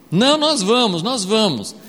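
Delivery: eager, insistent tone.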